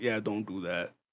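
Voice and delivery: grave, serious delivery. Retelling a story, quoting Dad: imitating Dad being serious. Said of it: "Dad was so serious".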